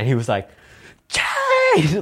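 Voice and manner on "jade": put-on, piercing, very high, loud top-of-lungs scream. Retelling how Rob screamed at Jade: imitating a scream. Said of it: "at the top of his lungs".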